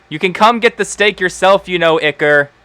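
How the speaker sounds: high-pitched shouting across a distance. Voicing a character who yells at a creature to fetch the steak: yelling as Penelope. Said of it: "and Penelope yells".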